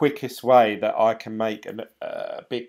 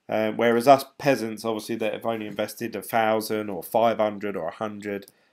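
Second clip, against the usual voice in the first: ordinary talk, nothing marked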